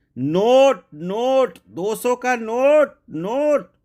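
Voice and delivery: mock shrill, repeated, very high, loud hollering. Retelling repeating a request to grandma, saying it even louder. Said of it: "मैंने फिर और जोर से कहा".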